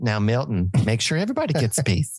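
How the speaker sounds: put-on Minnesotan accent. Reminded of a film character, quoting her line: Office Space lady's Minnesotan accent. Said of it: "your Southwest voice is Minnesotan instead of Texan".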